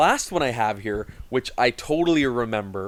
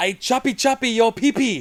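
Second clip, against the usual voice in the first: squeaky, very high-pitched voice; 10 semitones higher, 4 dB louder than usual. Retelling a funny remark Yamaguchi-san made, imitating Yamaguchi-san. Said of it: "That was my impression of Yamaguchi-san".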